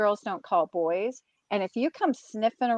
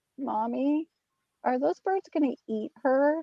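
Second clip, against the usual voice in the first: put-on voice of a small boy; 3 semitones higher, 4 dB quieter than usual. A mother quotes her son asking about a scene: little boy voice. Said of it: "in his little boy voice".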